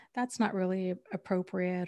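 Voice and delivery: ordinary talk, nothing marked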